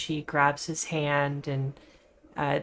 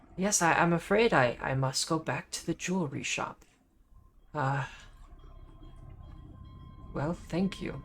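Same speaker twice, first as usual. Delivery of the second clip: put-on old man voice, quieter; 3 dB quieter than usual. Voicing an old man speaking to the group, in an old man voice. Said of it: "this old man stands up and kind of hobbles".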